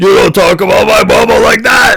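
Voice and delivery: very high, rasping, rough ogre bellow. Voicing an ogre yelling at another ogre: Chain Brute yelling. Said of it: "the other ogre and goes".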